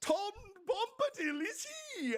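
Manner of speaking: cheerful shouting. Voicing a jolly figure who attacks wraiths: Tom Bombadil yelling. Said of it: "just yells".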